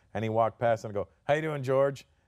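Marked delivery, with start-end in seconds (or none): 1.2-2.0 put-on cheeky, smart-aleck wise-guy tone. Retelling greeting a passing stranger as a kid: imitating own smart-ass greeting. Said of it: "Being a smart-ass".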